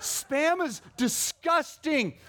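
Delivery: play-acted, very high, revolted, disgusted yelling. Retelling a man who suddenly started yelling; retelling a yell. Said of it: "he starts yelling".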